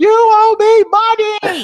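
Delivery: very high, very loud, dragged-out holler. Picturing spotting someone in the theater: imagined yell. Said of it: "I'm gonna start yelling".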